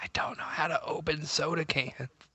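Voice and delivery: quiet whispered speech. Retelling what an ex said at a party: imitating a whisper. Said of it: "she whispers to me in the middle of a party".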